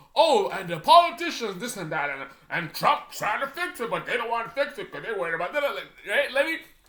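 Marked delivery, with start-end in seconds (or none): 0.1-5.6 mocking put-on crazy voice, higher. Mocking how a video is made, imitating Cash Jordan: mocking Cash Jordan impression. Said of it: "Cash Jordan is".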